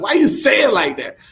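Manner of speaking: high, puzzled, challenging tone. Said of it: "and I was like".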